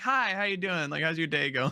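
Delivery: put-on sweet, extra-polite nice-person voice. Retelling reaching the drive-through window and greeting, in an extra-polite tone. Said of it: "my tone completely changes. I'm just a nice person".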